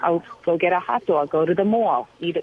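put-on Long Island accent. Show how you used to talk when kids in TV broadcast class made fun of you: Long Island accent. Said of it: "i used to talk like this".

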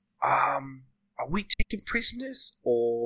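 very slow, hushed half-whisper. Leaning back in character to quietly ask a companion: half-whispering. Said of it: "just whisper".

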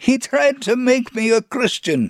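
mock agitated shrill shriek, very high. Retelling an agitated man's outburst: imitating a high-pitched scream. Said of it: "screamed in a high-pitched voice".

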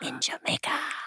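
hushed, unvoiced storyteller's whisper.

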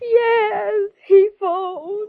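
crying while talking. Answering the private detective at her door, crying while talking. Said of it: "unless you stop crying".

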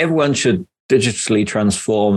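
ordinary delivery

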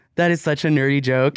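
plain

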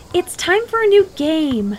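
high, nagging, whiny voice. On the school field, a girl speaks to the narrator, whining. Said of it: "Alyssa whined".

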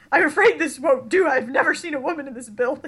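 shocked, embarrassed, mortified, scandalized tone. Quoting the mortician when Phryne breezes into the morgue: imitating a mortified mortician. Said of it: "is, like, mortified".

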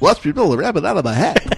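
high cartoon moose voice. Teasing the other speaker about how he now sounds: Bullwinkle voice. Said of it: "It's exactly what you sounded like".

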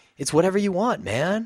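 high, laid-back mock college-kid voice.

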